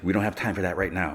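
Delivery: plain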